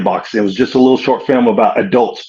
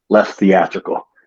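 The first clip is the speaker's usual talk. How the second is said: acted-out whisper, lower in pitch; 3 semitones lower than usual. Retelling what the director whispered to you on the first take, retelling a whisper. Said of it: "just comes over and whispers to me".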